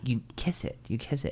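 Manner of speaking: soft, hushed, coaxing tone. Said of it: "The, the guy was like".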